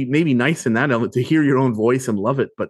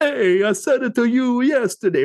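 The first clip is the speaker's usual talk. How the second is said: very high cliché Italian accent; 11 semitones higher than usual. Showing how people imitate Italians: imitating Italians. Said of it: "you know how people will imitate Italians".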